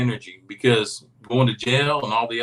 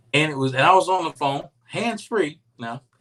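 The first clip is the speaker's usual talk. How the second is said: ordinary delivery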